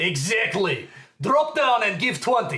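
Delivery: put-on Russian accent on English. Voicing Mister Shepard ordering the guards to do push-ups: Mister Shepard Russian accent. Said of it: "This is pretty Russian".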